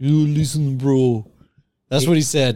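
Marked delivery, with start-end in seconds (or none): 0.0-1.3 put-on English in a Ukrainian accent. Retelling what a man said to the speaker, in a put-on Ukrainian accent. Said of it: "it's fucking Ukrainian".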